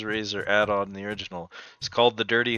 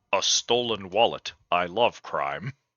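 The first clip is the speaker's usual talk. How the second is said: put-on robot police voice; 3 semitones lower than usual. Repeating a line after another player heard it as RoboCop: RoboCop voice. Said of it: "I heard it in RoboCop's voice".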